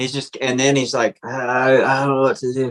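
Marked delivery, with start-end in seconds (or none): 1.2-2.7 indistinct mumbled speech. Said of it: "he starts mumbling".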